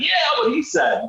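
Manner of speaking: bad, very high-pitched hype-man style voice. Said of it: "is that your [name] impersonation?".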